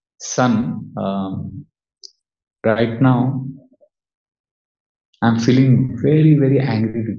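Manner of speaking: grave, slow, measured and deliberate delivery. Retelling how a father calmly told his son he was angry: imitating father speaking very softly. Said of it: "he would say very softly".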